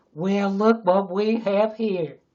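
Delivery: booming, very loud, slow put-on Texas accent. Claiming they can do one, a put-on Texas accent. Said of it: "I can do a Texas accent".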